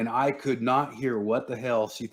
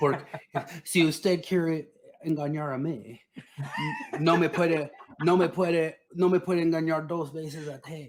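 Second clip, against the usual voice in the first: put-on Texan-accented Spanish, higher pitch; 6 semitones higher than usual. Doing a Spanish impression for the others: George Bush impression in Spanish. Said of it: "but I could do his Spanish".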